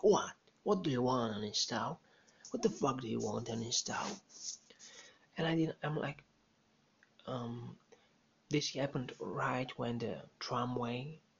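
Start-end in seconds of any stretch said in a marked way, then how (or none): 0.0-4.2 mock mean, aggressive snap. Retelling how a woman turned around and snapped back, imitating a mean, aggressive snap. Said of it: "she said it like a mean bitch".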